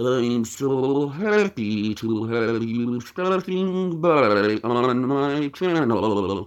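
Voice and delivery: very slow, drawn-out voice, every word dragged. Doing impressions one after another: Stephen Hawking impression. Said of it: "Stephen Hawking".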